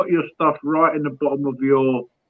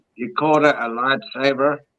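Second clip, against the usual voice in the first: slow, drawn-out put-on Australian accent. Retelling what a guy said to another speaker: Australian accent. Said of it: "to you in an Australian accent".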